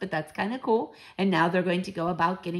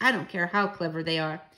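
usual speaking voice

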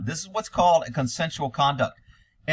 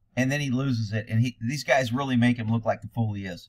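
plain

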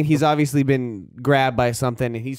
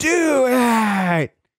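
screaming at full volume. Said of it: "he screams".

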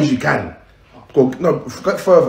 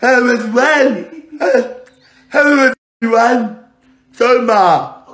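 mocking, drawn-out put-on intro voice; 8 semitones higher than usual. Complaining about who represents him now: imitating Omar. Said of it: "Now I got".

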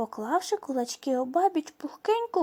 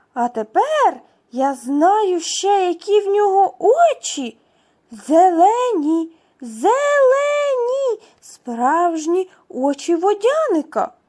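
very loud, joyful cry, "зелені" stretched; 3 semitones higher, 10 dB louder than usual. A water spirit exclaims to his wife over their baby son, joyful exclamation. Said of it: "радісно вигукнув водяник".

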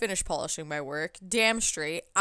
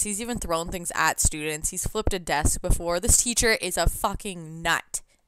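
usual speaking voice

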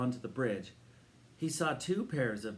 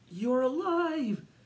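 very high, loud, bursting exclamation; 11 semitones higher, 5 dB louder than usual. A narrator reads Eric's reaction to the old man, exclaiming. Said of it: "Exclaimed Eric".

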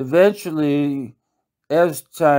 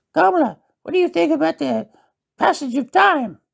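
very high, scratchy, creaky put-on little-man voice; 13 semitones higher than usual. Retelling a practice exchange with kamala, in a put-on midget voice. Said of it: "I'm going to try to do the midget voice".

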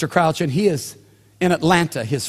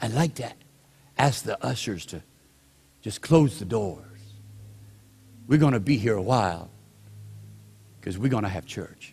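very soft, low, breathy murmur; 7 semitones lower, 7 dB quieter than usual. Quoting what a man said as he leaned into the mic, very soft and breathy. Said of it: "in his very soft, breathy voice".

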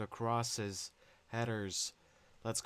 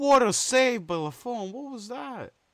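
full-on shriek, very high, very loud, shrill; 13 semitones higher, 10 dB louder than usual. A streamer reacting to a save in a football game: screaming into the mic. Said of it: "Sorry for screaming to the mic".

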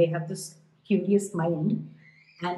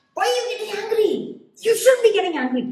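high, loud mock parental yell. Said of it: "parents yell at their kids".

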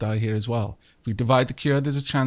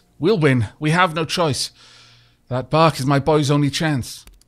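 desperate growling voice, louder; 3 semitones higher, 5 dB louder than usual. Voicing a woman whose son is ill, refusing to back down: desperate growl. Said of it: "Desperation in the growl in the woman's voice".

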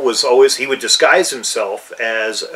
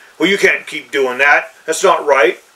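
put-on self-righteous, sanctimonious scolding tone; 3 semitones higher than usual. Retelling how self-righteous campaign characters objected, mock self-righteous scolding. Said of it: "who kind of were self-righteous".

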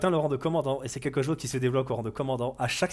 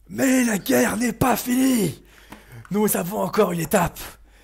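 loud shouting, much higher pitch; 7 semitones higher, 7 dB louder than usual. In a role-play, a small rebel addresses the crowd: small rebel shouting a speech.

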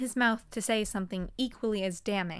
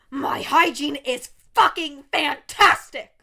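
big booming voice, very loud; 4 semitones higher, 10 dB louder than usual. Narrator reads a character's reply to a teasing question; booming voice. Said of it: "said in a booming voice".

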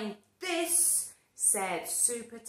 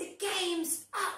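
shouted, high superhero voice; 8 semitones higher than usual. Reading a picture book aloud, voicing a character catching sight of the runaway pea: yelling. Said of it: "yelled Supertato".

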